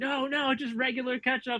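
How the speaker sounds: very high, shrill, screeching scream. Retelling a friend screaming a correction from the car: imitating Paul screaming. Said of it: "Paul would be screaming".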